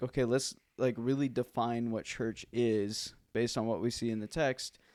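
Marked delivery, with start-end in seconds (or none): none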